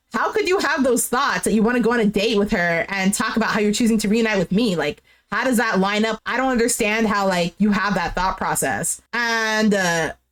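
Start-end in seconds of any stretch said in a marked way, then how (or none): none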